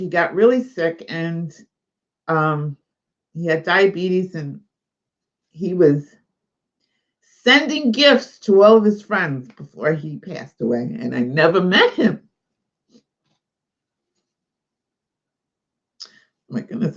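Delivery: speaking through tears. Telling a story about a man who has died, crying while talking. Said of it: "I didn't mean to cry".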